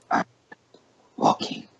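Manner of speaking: put-on dragon creature voice. A game master voices a dragon talking to a player's character, in a dragon voice. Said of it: "let me get a dragon voice".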